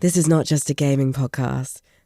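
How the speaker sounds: low, flat, purring posh advert voiceover.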